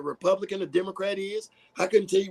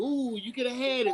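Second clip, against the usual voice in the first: mocking, teasing, rubbing-it-in taunting tone; 4 semitones higher than usual. Complaining about commercials, voicing them, imitating a taunting voice. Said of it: "they waving shit in our faces like".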